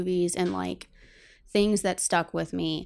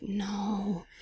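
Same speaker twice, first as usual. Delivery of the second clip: put-on horrified voice, quieter; 5 dB quieter than usual. Retelling a mother's reaction to a Southern accent: imitating horrified mother. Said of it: "my mother would always be horrified".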